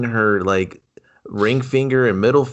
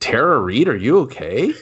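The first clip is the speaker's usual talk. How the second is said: ordinary talk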